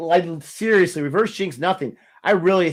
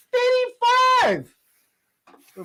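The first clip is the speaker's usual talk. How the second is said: high-pitched voice, rising higher. Calling out eighty-five during the match: voice getting high. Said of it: "my voice is getting so high".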